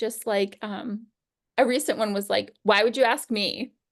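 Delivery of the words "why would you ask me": put-on annoyed, irritated tone. Retelling what a child said when asked something: imitating an annoyed voice. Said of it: "In an annoyed kind of voice".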